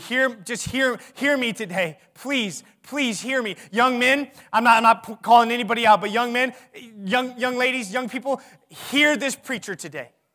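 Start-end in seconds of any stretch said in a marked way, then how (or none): 0.0-3.6 pleading, much quieter and slower. A preacher urging young people to listen to him: pleading. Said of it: "I'm begging you".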